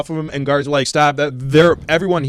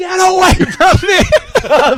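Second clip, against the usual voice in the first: mock scream, stretched very high and drawn out; 6 dB louder than usual. Retelling how their mom reacted to their dad, imitating someone screaming. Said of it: "she just started screaming and like".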